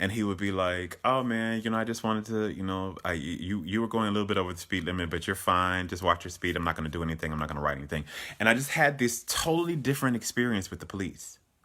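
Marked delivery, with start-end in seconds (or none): none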